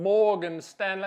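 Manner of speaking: big, loud, booming cartoon rooster character voice. Saying a firm's name the way one has to: Foghorn Leghorn voice. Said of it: "you gotta say it like Foghorn Leghorn".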